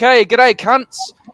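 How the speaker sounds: warm, affectionate tone. Explaining how delivery changes a swear word, greeting a room of friends: friendly greeting. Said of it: "tonality and delivery of the word".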